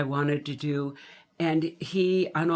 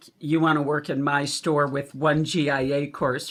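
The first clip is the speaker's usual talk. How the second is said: normal talking voice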